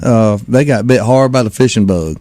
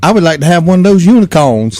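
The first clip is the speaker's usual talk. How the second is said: put-on higher girl's accent, oddly grown-up; 6 semitones higher than usual. The speaker asks Emmy which prize she wants; imitating Emmy's accent. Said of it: "just like an adult with her accent".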